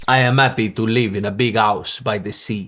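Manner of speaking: Italian accent, h dropped from "happy". Teaching an italian accent, saying an example sentence, in an italian accent. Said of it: "Here's an example sentence".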